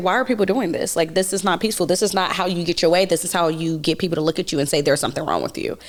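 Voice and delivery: ordinary talk, nothing marked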